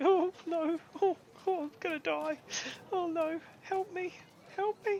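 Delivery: very high, drawn-out, slow fearful whimper. Game master voices someone hiding in a barrel; whimpering in fear. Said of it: "you hear whimpering".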